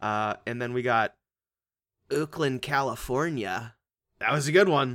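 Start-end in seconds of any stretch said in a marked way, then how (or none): 0.5-3.7 slow, fake put-on California accent. Reading out listener locations for shout outs: put-on california accent. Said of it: "That's a California accent".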